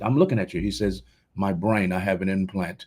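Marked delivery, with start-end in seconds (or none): 1.3-2.8 flat, level, unvarying monotone delivery. Retelling a man's answer when questioned by a doctor, imitating a man's monotone. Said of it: "He's talking monotone".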